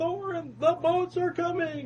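high-pitched yell.

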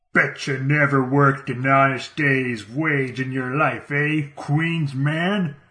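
mocking, goading, jeering tough-guy voice. Narrating, one man of a group cornering a young man in an alley addresses him: jeering. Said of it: "jeers as he addresses a young man".

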